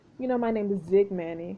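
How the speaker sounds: usual speaking voice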